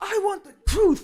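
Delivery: intense movie-line delivery, very high and very loud. Reenacting a movie quote after another speaker asks for more intensity, mock-intense. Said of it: "with more intensity, man".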